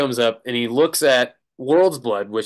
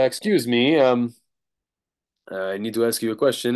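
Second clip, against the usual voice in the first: put-on English spoken with a Polish accent. Retelling a man coming up to the merch table, in a Polish accent. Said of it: "Polish accent".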